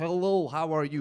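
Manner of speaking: put-on Romanian-accented speech. A speaker who moved to the uk demonstrates a romanian accent. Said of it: "I don't really sound Romanian".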